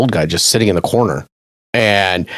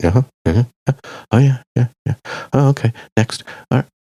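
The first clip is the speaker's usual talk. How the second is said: put-on muttering under breath. Retelling what a man in front of the speaker said, imitating him mumbling to himself. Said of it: "he was mumbling to himself, going".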